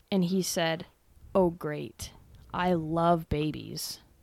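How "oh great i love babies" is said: put-on mock-sarcastic tone. Retelling what a late passenger said on seeing her nursing Emmy: imitating a sarcastic remark. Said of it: "Very sarcastically".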